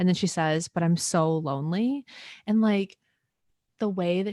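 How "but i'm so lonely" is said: mock tearful, weepy, slow crying voice. Retelling a tearful line from the film Little Women: imitating Jo March crying. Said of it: "the way that she says it, she's, like, crying".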